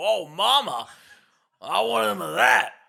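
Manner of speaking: very loud, slow, rough, creaky drawn-out bellow. Retelling a scene from the film in an impression of Jack. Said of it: "That's my Jack impression".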